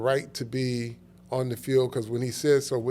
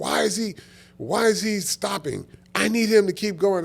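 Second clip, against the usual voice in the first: mock screaming, high-pitched, demanding tone; 8 semitones higher, 4 dB louder than usual. Retelling a drill where Parcells wanted him to keep going: imitating Parcells screaming.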